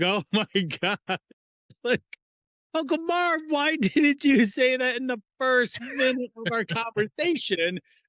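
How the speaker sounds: acted out, very high, chuckling, laughing talk. Retelling a conversation with an uncle, the speaker replies to him, retelling laughing out loud. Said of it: "I just started chuckling, laughing out loud".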